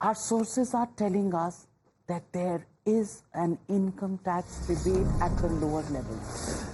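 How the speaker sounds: hushed, secretive, confidential half-whisper. Anchoring a mock news broadcast, sharing breaking news, half-whispering. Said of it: "I'm whispering it".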